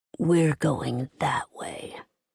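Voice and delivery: low, quiet, amused murmur. Kaz turns the narrator the other way, speaking in their ear: low amused voice. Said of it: "In an amused voice, he said in a low voice in my ear".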